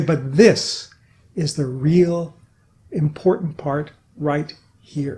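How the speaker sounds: deliberately slowed, halting, stressed phrase. Demonstrating how a change in tempo adds emphasis, slowing down for emphasis. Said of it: "at the end of a sentence you slow down".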